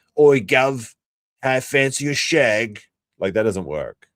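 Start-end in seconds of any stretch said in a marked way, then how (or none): 0.2-2.8 put-on London accent, very slow and drawn-out. Showing which British accent fails with Americans: London British accent. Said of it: "if you get an actual British accent".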